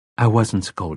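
plain reading voice

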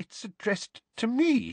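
high, trembling, quavering voice. Reading a novel aloud, the narrator voices the aunt answering the uncle, in a shaking voice. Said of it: "said Aunt Petunia in a shaking voice".

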